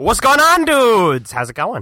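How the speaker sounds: very high, squeaky, swooping, cartoonish puppet voice. Greeting everyone as the puppet friend joining the group, Rug Boy puppet voice. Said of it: "you do a killer Rugs impersonation".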